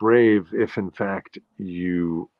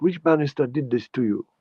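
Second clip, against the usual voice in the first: put-on Jamaican-accented, higher pitch; 6 semitones higher than usual. Retelling what a woman from Jamaica said after he got hurt, Jamaican accent. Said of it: "she had this great accent".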